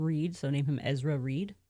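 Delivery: ordinary talk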